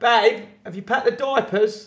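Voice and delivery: very high, very loud, shrill shout. Retelling what someone called out while getting the stroller: imitating someone shouting.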